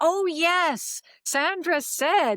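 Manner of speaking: sudden remembering tone.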